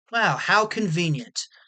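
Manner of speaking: dry, sardonic, sarcastic little aside. Reacting to finding there is no camera to show: sarcastic. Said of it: "Sorry for the sarcasm".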